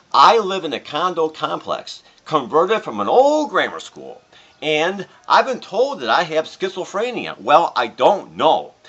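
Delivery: ordinary talk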